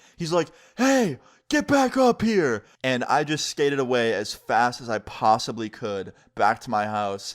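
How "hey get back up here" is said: play-acted shrill, very high, loud scream. Retelling a stranger shouting down a bike path: imitating a man screaming. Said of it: "starts screaming down the trail at me".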